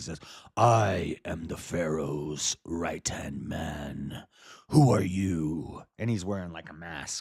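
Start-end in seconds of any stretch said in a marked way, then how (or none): 0.6-5.8 deep, rough, very slow, drawn-out voice. Acting out Joseph speaking to his brothers behind a mask: deep Batman voice. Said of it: "He's pulling a Batman on him".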